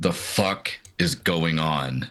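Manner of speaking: very irritated, slow, annoyed delivery. Voicing a character dropped flat on his back: annoyed in character. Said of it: "looked very annoyed and just says".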